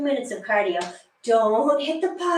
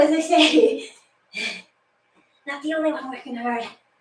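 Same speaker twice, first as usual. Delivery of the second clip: breathless, winded, out of breath; 3 semitones higher than usual. Leading a workout and counting through the sets, out of breath. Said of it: "i'm really out of breath".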